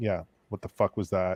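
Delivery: ordinary delivery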